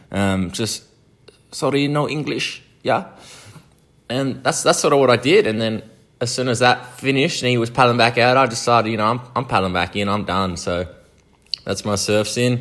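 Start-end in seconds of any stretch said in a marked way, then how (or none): 1.5-3.1 fake pitched-up Spanish accent, clueless tourist voice. Retelling pretending to be a spanish traveller who speaks no english: imitating a fake spanish accent. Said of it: "pretended I was a Spanish traveller".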